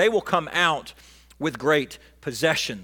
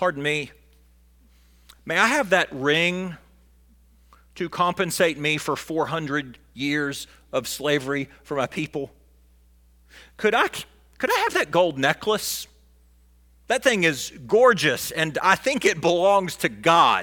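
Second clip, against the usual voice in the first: ordinary talk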